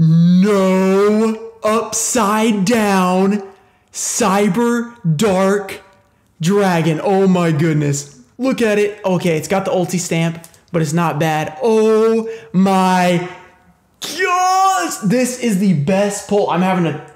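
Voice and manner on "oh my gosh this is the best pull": excited yelling, much higher pitch. Streamer opens a pack and pulls a rare card, yelling with excitement. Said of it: "because I'm yelling".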